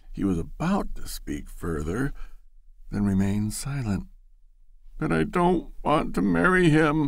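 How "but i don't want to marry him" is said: higher-pitched, protesting, breaking-forth outburst. Loretta answers Ned: protesting. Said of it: "Loretta broke forth protestingly".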